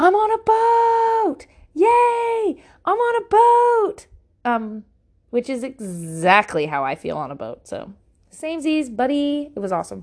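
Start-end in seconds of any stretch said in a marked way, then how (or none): 0.0-4.1 very high, very slow, shrill, drawn-out scream. Retelling what Hank kept screaming on the boat: imitating Hank screaming. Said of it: "Hank kept screaming".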